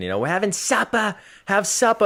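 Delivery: put-on Boston accent. Recalling mom at home over pasta dinners, mom's Boston accent. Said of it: "with her Boston accent".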